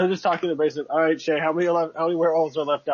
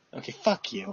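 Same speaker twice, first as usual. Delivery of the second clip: testy, snippy whisper; 4 semitones higher, 7 dB quieter than usual. Answering the other player's question about the tiny army, snippy. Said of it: "get snippy with me".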